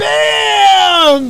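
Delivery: very high, loud, excited yell.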